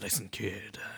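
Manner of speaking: soft, hushed narrator voice, like voiceover. Talking about a voice actor's award, the speaker does a Logan Cunningham narrator impression. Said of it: "Det er jo han som er fortellerstemmen".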